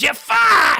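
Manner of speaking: very loud, high, shrill screaming voice. Trying the screaming voice of Gilbert Gottfried: screaming Gilbert Gottfried voice. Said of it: "I can't do that voice in my apartment 'cause you have to, like, scream the whole time".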